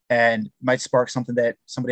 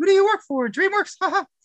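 cartoon mouse voice, pitched much higher. Guest asked by the host to do a Mickey Mouse voice, Mickey Mouse voice. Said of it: "Do you do some Mickey Mouse for us?".

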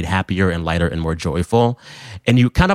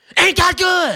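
very high, shrill, all-out top-of-lungs scream, acted out. Speaker recalls their mother's prank on passing drivers, retelling a yell at top of lungs. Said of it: "my mother would yell out at the top of her lungs".

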